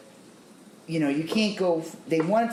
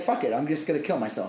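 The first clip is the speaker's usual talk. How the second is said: usual speaking voice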